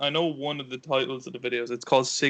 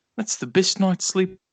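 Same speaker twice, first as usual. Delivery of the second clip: loud, high put-on New Zealand accent; 6 semitones higher, 6 dB louder than usual. Retelling a mattress ad with a Kiwi speaker: imitating a Kiwi accent. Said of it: "one of them's a Kiwi".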